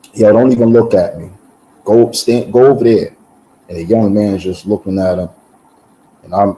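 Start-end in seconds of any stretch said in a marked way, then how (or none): none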